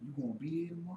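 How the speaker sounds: deep bass, very low and very soft. Speaker quotes a man who came early, imitating his deep bass voice. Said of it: "the only time he put bass in his voice".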